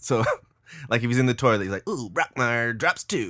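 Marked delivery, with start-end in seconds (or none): 1.9-3.3 put-on swooping, old-timey sports announcer call. Describing a TV character who talks like an announcer about everything, doing Brockmire announcer voice. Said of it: "them just talking like that on everything".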